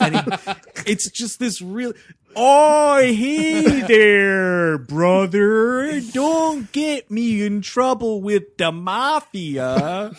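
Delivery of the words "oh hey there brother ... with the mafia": slow, put-on Canadian accent. Imitating a guy from Wheels Ontario: Canadian accent. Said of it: "the Canadian accent on this guy".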